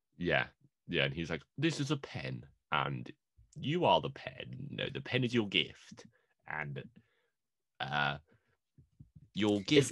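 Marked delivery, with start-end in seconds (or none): 1.6-9.9 slow, drawn-out, word-by-word delivery. Retelling a movie scene another speaker liked: James McAvoy impression. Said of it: "is this your James McAvoy impression?".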